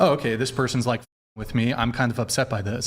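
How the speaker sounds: ordinary talk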